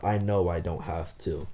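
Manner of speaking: ordinary talk, nothing marked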